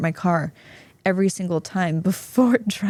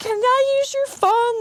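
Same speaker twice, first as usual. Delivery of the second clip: very high, tearful, crying voice. Retelling asking strangers at dinner for their phone: retelling own crying plea.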